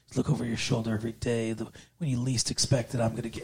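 low, soft muttering.

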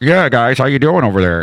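talking like a police scanner dispatch radio. Retelling how their own voice sounded on playback: police scanner voice. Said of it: "I sound like I'm on a freaking police scanner".

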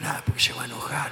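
hushed whisper. Talking with the padre, explaining why to keep it down, speaking low and quiet. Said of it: "¿Por qué hablas bajito".

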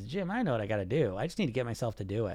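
put-on smug voice. Speaker mimicking a phrase dieters always tell him, mock-smug. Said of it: "So smugly".

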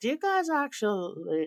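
very high-pitched put-on Montana accent. Acting out Canadians talking to Americans across the border, in a put-on Montana accent. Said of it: "this is my greatest Montana accent".

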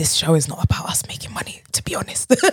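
fully whispered, soft, breathy delivery. Talking about the show to a co-host, whispering. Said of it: "with the whisper".

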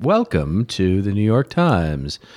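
canned, swooping synthetic female announcer voice. Describing synthetic narration as uncanny, doing an airport announcement lady voice. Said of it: "it sounds like the lady at the airport".

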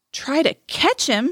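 piercing, shrill, high-pitched cry. Narrator reading Tom's reply to August's story, shrill. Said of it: "shrilled Tom".

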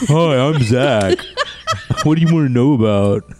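mocking, put-on stupid voice. Mocking a friend's voice after the others joke about an NPC: stupid voice imitating Zach. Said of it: "I bet he's got a stupid voice".

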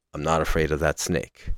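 mock grave, quiet tone. A speaker retells a fighter calming down after screaming at a rival, retelling a quiet, grave line. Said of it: "quietly, but still gravely says".

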